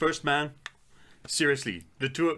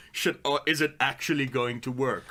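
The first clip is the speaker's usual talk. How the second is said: usual speaking voice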